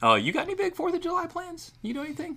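high-pitched voice, pitched way up. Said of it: "You like how I went high-pitched voice right there?".

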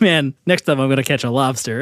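ordinary talk, nothing marked

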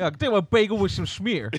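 shoddy put-on American accent, very high and loud. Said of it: "I kinda got a shit American accent now".

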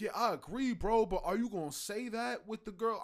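normal talking voice

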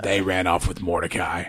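raspy voice like a heavy smoker. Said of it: "You sound like you s-, smoke a pack a day".

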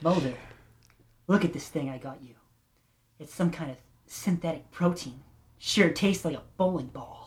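sultry, sexed-up voice. Reading the Scully part of a script aloud: sexy Scully voice. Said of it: "She's got a sexy voice. I gotta try and sex it up".

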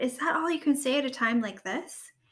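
ordinary delivery, nothing marked

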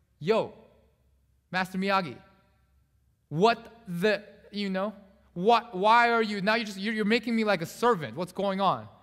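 fed-up, angry, sputtering and stumbling outburst. Retelling a film scene where the student finally confronts his teacher: imitating an angry outburst. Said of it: "he gets really angry".

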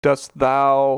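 faux old-fashioned English. Retelling a show scene where a character speaks in old english: mock old english speech.

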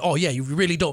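put-on snobby cop voice. Retelling what a cop said after pulling him over: imitating a snobby cop. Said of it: "he's already snobby".

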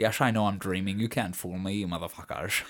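taunting, put-on film-star voice. Joking about tormenting people in lucid dreams: Sean Connery voice. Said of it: "tormenting people by talking like this".

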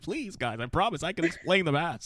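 high, pleading, begging voice. Retelling a movie scene after they lock the car; imitating someone begging. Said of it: "he was just begging, like".

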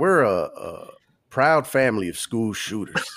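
put-on country accent. Mid-conversation, joking around and doing a put-on country accent. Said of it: "Doing that accent".

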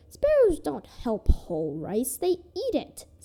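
swooping, scornful, contemptuous scoff. The stepmother answers Pear Blossom's account, scoffing. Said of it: "scoffed the stepmother".

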